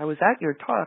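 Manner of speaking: timid, bashful little voice. Quoting an older volunteer cleaning the dining room late at night: imitating a very shy voice. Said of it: "in this very shy voice".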